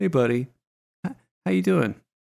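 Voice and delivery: easygoing, laid-back, buddy-buddy cool-professor tone. Greeting a co-host with a chair flipped around backwards: imitating a cool professor. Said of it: "like that cool professor who just wants to look at you".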